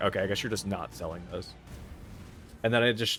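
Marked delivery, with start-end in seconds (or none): none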